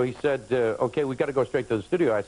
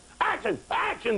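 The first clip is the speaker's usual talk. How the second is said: mock very high-pitched screamed call. Speaker recalls two people on set yelling action, retelling their screaming. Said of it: "they're screaming".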